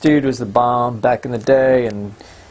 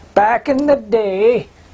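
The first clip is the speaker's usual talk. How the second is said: put-on very high-pitched, slow old man voice; 9 semitones higher than usual. Naming the episode, the speaker says the title in an old man voice. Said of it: "My old man voice".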